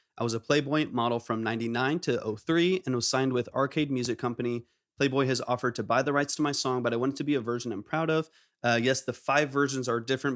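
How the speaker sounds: normal talking voice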